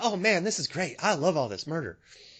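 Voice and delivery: calm, cheerful, friendly put-on really nice guy voice. Imitating a friendly viewer who loves the murder: put-on really nice guy voice. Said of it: "sound like a really nice guy".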